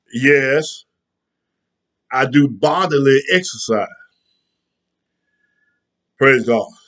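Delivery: slightly winded, out of breath. A speaker who just finished exercising talks to listeners, a little winded. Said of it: "I'm a little winded because I just got through doing my bodily exercise".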